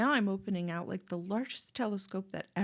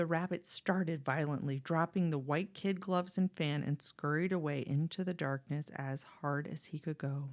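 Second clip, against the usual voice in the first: ordinary delivery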